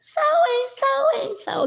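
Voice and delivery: put-on high-pitched voice. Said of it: "She talked with a high-pitched voice".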